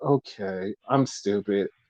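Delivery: soft, joyless, deflated and defeated voice. Retelling a wrestler's reply to an offer of help: imitating a sad, unexcited reply. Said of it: "it was just all sadness. There was no excitement".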